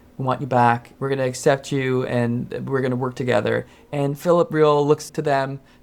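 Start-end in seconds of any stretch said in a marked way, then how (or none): none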